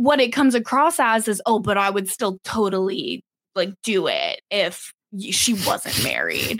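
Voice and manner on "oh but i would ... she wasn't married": put-on dude voice, swooping pitch. Retelling how a man's reply comes across, in a put-on male voice. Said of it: "That's my impression of a man".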